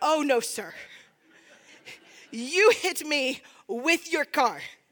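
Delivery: slow, drawn-out, full-blown mock outrage. Retelling a driver being mad, imitating own outrage. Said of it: "I move from anger into a full-on outrage".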